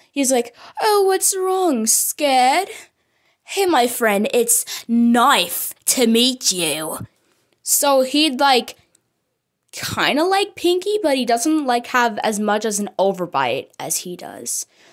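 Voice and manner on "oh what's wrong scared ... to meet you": bouncy, upbeat British male voice, "nice" stretched. Voicing a mischievous character meeting someone: energetic british accent. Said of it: "the energetic, um, British guy".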